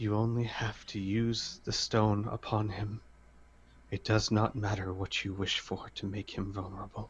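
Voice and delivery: gentle, quiet, softly spoken voice. Voicing a character sitting in the corner: quiet voice. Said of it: "says in a quiet voice".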